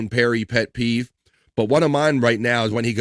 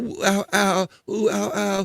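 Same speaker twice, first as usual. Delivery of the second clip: very slow, high, drawn-out fake pain moans; 9 semitones higher than usual. Mocking Perry's complaints of pain: imitating Perry's fake pain moans. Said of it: "he's full of shit with all the".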